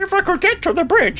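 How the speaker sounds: very high-pitched froggy cartoon voice. Voicing a corporate liaison who wants to get to the bridge: Kermit the Frog voice. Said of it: "it's Space Kermit the Frog".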